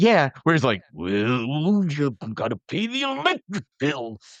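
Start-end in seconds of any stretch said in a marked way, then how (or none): 0.9-4.2 very slow, swooping wrestler drawl, well dragged out. Retelling a video of a man who imitates a wrestler: Macho Man voice. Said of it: "they would do it in the Macho Man voice".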